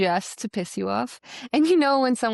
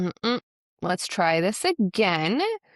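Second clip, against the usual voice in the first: play-acted slow, correcting parental tone. Retelling how mom corrected the kids: imitating mom's correcting tone. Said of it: "I know exactly the tone of voice".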